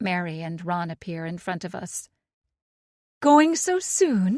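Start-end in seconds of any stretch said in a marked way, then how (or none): 3.2-4.4 very high, very loud, shrill, syrupy sweetness. Reading a story aloud, a host asking departing guests: voice dripping with sweetness. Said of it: "her voice once again dripping with sweetness".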